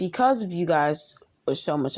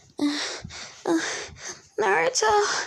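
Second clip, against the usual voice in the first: put-on very high, girly voice pitched way up. Telling a story, the speaker voices Kakashi in a Kakashi girl voice. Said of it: "I'm gonna put on my best Kakashi girl voice".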